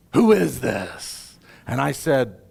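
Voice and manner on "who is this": deep, fairly loud voice. Retelling a phone call, voicing the stranger on the other end in a low voice. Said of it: "said in a low voice".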